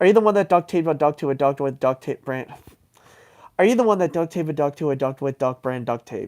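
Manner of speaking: fast, rattled-off, back-to-back tongue twister. Trying to say a tongue twister three times fast, a fast tongue twister. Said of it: "do that like three times fast".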